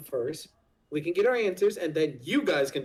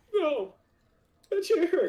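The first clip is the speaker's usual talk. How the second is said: fake sobbing, higher pitched; 12 semitones higher than usual. Mimicking the captive's reaction after he is punched: mock crying.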